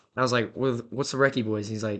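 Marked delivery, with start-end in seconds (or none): none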